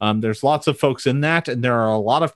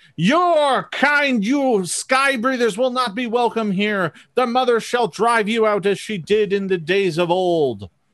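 shrill, fanatical screaming voice; 8 semitones higher than usual. Voicing kobold fanatics driving the outsiders out: screaming kobold fanatic. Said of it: "they start screaming".

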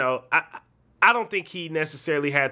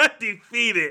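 high-pitched, laughing while talking. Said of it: "That made me laugh".

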